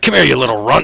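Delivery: loud, threatening, taunting delivery. Voicing an NPC who shoves at a player: NPC taunting a player. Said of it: "He's like".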